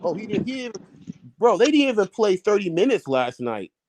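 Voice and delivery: high, rising, excited outburst.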